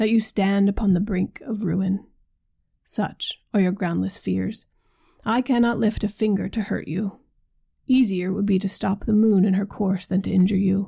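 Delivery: ordinary delivery, nothing marked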